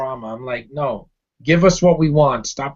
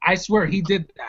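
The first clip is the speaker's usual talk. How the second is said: plain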